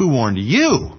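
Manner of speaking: heavy weight landing on the word you. Showing where the emphasis in a question can fall, stress on you. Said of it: "Or the emphasis could be upon you".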